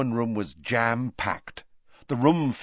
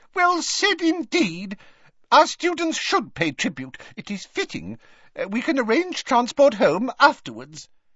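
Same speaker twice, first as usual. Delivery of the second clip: little very high squeak; 13 semitones higher than usual. Narrator reading a professor's reply about sending students home, squeaky Flitwick voice. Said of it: "squeaked Professor Flitwick".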